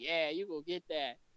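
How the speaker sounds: mock, insincere, sarcastic cheering-on tone. Retelling patting a friend on the back: imitating sarcastic encouragement. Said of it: "it was sarcastic".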